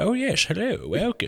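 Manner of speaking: put-on soft British old man voice. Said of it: "I feel like it's British".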